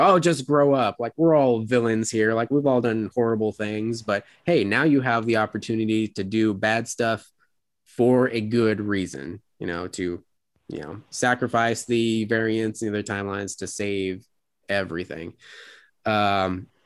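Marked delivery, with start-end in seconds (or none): none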